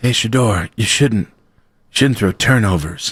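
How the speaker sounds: put-on whispering. Whispering advice to a quarterback as a joke: fake whisper. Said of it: "did somebody just whisper at the quarterback?".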